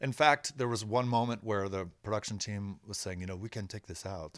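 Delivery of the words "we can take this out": sudden put-on French accent. Retelling what the production team said, in a french accent. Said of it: "I don't know why I'm doing a French accent".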